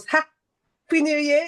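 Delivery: phrase broken by a held pause. Podcast host opening the new year's first episode, saying it with a pause. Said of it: "You have to say it with a pause".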